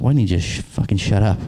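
ordinary delivery

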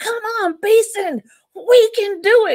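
mock screaming, very high and drawn out. Retelling urging a teammate over an obstacle course wall: imitating own past scream. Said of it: "I'm screaming behind this young lady".

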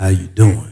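phone voice, dropped way down low. Acting out [name] getting on the phone, in a lowered phone voice. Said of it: "get on the phone and my voice goes down".

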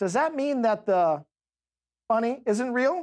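mock grave, composed, very calm, serious tone. Retelling asking parents at Easter about the bunny: imitating own serious, very calm tone. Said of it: "I got real serious, very calm".

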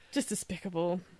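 mock serious, grave true-crime narrator intonation.

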